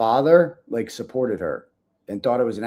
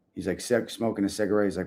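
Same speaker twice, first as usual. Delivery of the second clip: plain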